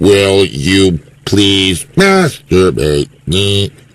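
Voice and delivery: very low, very slow, horrible computer voice. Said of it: "in that horrible Stephen Hawkins voice".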